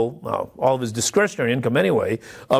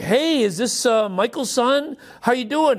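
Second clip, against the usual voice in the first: put-on very high, syrupy-sweet, sugary voice; 10 semitones higher than usual. Retelling a caller on the phone asking for his dad: mimicking a sugary, sweet voice. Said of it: "this sugary, sweet voice".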